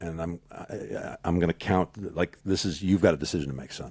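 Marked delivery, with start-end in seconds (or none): 2.8-3.9 put-on stern voice. Retelling what he said to the speaker: imitating a stern voice. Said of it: "he got real stern with me".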